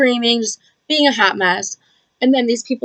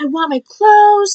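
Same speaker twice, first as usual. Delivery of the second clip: put-on very high, belligerent, angry screaming; 11 semitones higher, 4 dB louder than usual. Retelling being kicked out of a pool party without clothes, reenacting a scream. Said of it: "I'm screaming".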